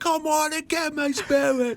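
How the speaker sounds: put-on Cockney accent with very high-pitched voice. Retelling what three nephews were yelling, in a Cockney accent. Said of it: "Like Cockney accents".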